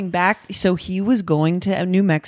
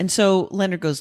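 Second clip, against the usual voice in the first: ordinary talk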